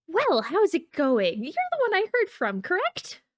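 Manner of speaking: very high, lilting, swooping sing-song character voice. Voicing the character greeting the party in the tavern: Akra Myosin voice. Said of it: "she's like".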